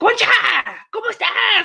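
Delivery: very high-pitched, long-distance calling out. Retelling parents calling a relative in Mexico on a rotary phone, imitating yelling into the phone. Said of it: "You don't have to yell into the fucking phone".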